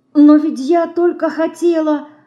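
whispering, upset and distressed. The little mouse, told by Dinka to go away, replies in an upset whisper. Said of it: "огорченно шепчет мышка".

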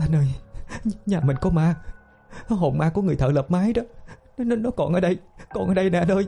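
terrified stuttering. Tram, just woken, clings to her husband, stammering in terror. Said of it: "lắp ba lắp bắp nói".

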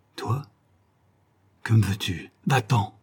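rasping, cracked, rough, broken hoarse voice. A man leans toward a visitor back after a long absence, hoarse, broken voice. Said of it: "d'une voix rauque, brisée".

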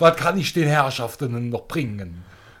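Kölsch dialect accent. Playing a waiter serving the guests in a sketch: Cologne Kölsch dialect. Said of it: "Mache dann natürlich auf Kölsch".

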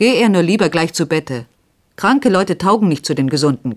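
gruff, hard voice. A man answering a sick man who wants to leave the candlelight, rough and harsh. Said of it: "gab ihm Horvath rau und hart zur Antwort".

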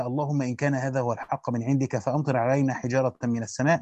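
usual speaking voice

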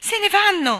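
very high, shrill, very loud excited shout. Michael grabs Jane's arm as the ark lifts off, an excited shout. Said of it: "gridò mentre l'arca si sollevava".

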